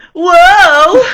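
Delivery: shrill, very high, very loud, drawn-out fake surprise. Picturing a character spinning after throwing someone: fake startled whoa after a spin. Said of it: "a little spin and going".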